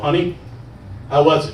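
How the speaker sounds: normal talking voice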